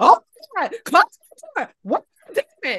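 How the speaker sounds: loud high-pitched screaming. Retelling yelling for someone to close the door amid banging, retelling a scream. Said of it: "And I'm screaming".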